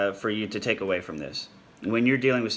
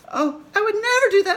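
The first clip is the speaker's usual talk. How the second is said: high, loud squeaking voice; 8 dB louder than usual. Showing how people under anxiety sound when lying: Mickey Mouse voice, high and squeaky. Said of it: "they go into what's called the Mickey Mouse voice".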